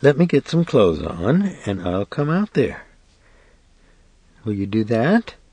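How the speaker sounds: light, faint, weak, fainting half-whisper. A woman holding a door against a man answers him in a fainting half-whisper. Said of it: "She spoke in that fainting whisper".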